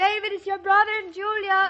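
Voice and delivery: loud calling out. Calling out through the house that visitors have arrived: shouting. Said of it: "you don't have to shout it right here".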